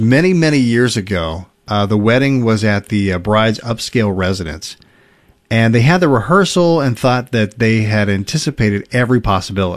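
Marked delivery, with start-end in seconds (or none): none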